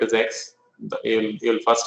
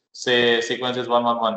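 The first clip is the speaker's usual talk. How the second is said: ordinary talk, nothing marked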